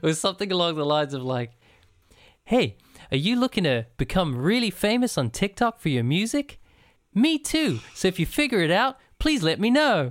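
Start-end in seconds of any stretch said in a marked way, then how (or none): 2.4-10.1 dead-sincere earnest voice, high and swooping. Retelling a TikTok video of a guy talking to camera: imitating an earnest speaker. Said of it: "he's looking real earnestly at the camera".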